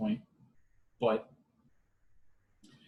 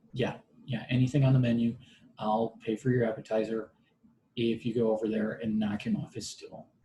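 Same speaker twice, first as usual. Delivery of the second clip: ordinary delivery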